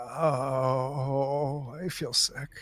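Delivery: put-on very slow, muffled old man voice. Voicing a figure hidden under the sheets: old man voice, muffled under sheets. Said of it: "he comes back".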